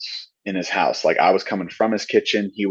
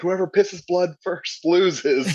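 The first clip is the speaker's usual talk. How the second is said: shrieked, shrill, at a very high pitch; 10 semitones higher than usual. Retelling a punching game, quoting the guy screaming in his ear; retelling a scream. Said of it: "he's screaming in my ear".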